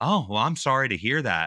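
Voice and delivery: snippy, mock sympathetic tone laid on with attitude. Quoting a woman who turned down the speaker's request, imitating someone with attitude. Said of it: "Like with an attitude and everything".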